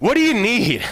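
irritated, put-out tone. Showing how God might seem to respond to requests: annoyed tone. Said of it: "where he doesn't want to hear from us".

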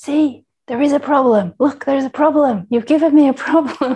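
gleeful complaining shout, high, loud and pleased. Retelling a woman made to wait in another line, imitating someone shouting. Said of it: "she started shouting".

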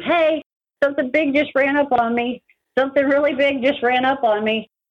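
loud yelling.

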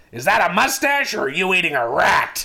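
loud, harsh, nasty raspy growl, dummy-like voice. Reading aloud a dummy's line to a guest: Mister Wood harsh raspy growl. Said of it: "I'll read a little more like that".

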